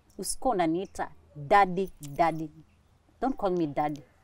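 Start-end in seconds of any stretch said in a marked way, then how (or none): none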